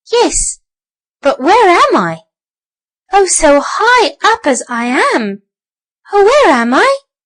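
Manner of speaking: tiny squeaky mouse voice, slow. Reading a story aloud, voicing the little mouse: squeaky little mouse voice. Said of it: "squeaked the little mouse".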